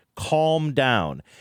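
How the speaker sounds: ordinary talk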